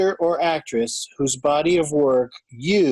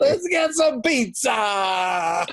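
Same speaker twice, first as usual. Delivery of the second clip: higher-pitched, mock Italian accent; 6 semitones higher than usual. Imitating an actor who tried out an Italian accent in the car: put-on Italian accent. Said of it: "you have a guy trying out Italian, Italian access".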